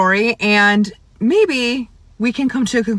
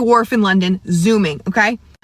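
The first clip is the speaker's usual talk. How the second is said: ordinary delivery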